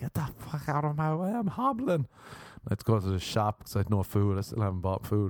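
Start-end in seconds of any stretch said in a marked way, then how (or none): 0.0-2.1 mock exasperated, high-pitched, frustrated screaming outburst. Retelling walking home hurt behind people, imitating own screaming. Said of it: "I was just went screaming".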